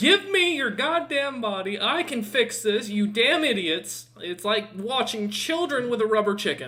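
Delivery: worked-up, impatient tirade. A djinn trying to take control of a player's body, agitated. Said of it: "You're kind of agitated".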